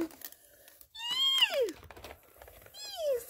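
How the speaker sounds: very high, swooping, gleeful excited squeal. Thanking Marlene for a gift, the speaker lets out an excited squeal. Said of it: "Sorry, I'm excited".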